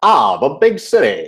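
storybook narrator voice-over delivery. Asked to give a little of his narrator role, Karate Tortoise narrator voice. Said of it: "Give us a little narrator".

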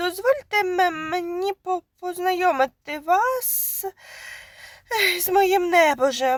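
high, halting, stammering, stumbling over the words. Reading the man's reply to the startled woman: stammering. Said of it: "затинаючись".

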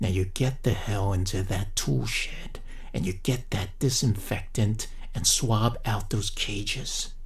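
slow half-whisper, every word weighed out. Narrator reads his next order while everyone stares, half-whispered, measuring every word. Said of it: "he whispered, measuring every word".

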